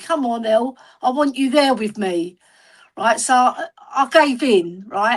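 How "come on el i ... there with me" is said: put-on begging, pleading tone. Retelling how a brother asked to come along: imitating someone begging. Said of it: "he was begging me".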